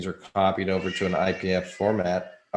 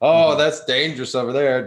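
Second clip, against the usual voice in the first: play-acted sarcastic alarm, raised and high; 7 semitones higher, 8 dB louder than usual. Mocking what the media always says about the web: mocking the media's warnings. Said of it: "based on what, what the media says all the time".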